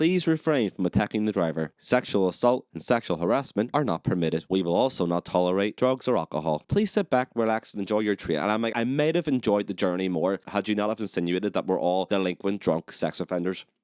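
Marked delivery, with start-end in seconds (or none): 0.0-8.4 mock automated female train announcer, robotic voice. The speaker recalls an announcement on the train from Dublin, in a robotic lady's voice. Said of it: "in this like robotic lady's voice".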